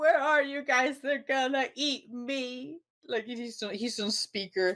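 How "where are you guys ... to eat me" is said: shrill, high-pitched scream. Retelling Donnie calling his brothers on speaker: imitating Donnie screaming. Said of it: "But then Donnie screams".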